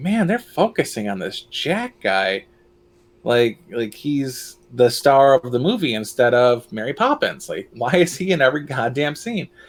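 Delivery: plain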